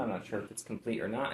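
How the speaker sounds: ordinary talk, nothing marked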